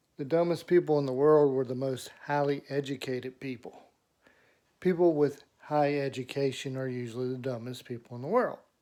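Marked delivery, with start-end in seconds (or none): none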